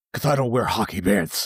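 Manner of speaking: deep superhero voice with lisp. Imitating how he does his Batman voice, Batman voice with a lisp. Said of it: "He does his Batman voice. It, it's so funny because he'll be like".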